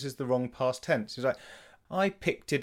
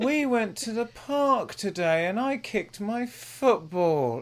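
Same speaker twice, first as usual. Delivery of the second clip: pitched-up whine; 9 semitones higher, 3 dB louder than usual. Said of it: "it sounds like a moan".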